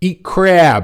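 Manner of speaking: poor Maryland accent. Reading out the second answer after a quiz clue: bad Maryland accent. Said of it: "not sure necessarily that's a good Maryland accent".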